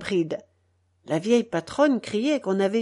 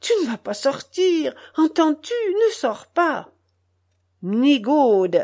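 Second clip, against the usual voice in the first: high-pitched, begging, imploring, pleading voice; 4 semitones higher, 3 dB louder than usual. A wife to her husband, who is dressed to go out, pleading. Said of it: "Sa femme le suppliait".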